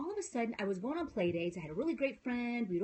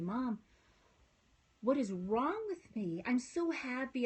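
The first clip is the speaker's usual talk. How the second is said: slow, mock crying voice. Retelling a phone call to mom, imitating own past crying. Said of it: "and I was crying".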